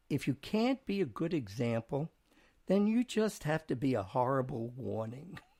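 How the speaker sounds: usual speaking voice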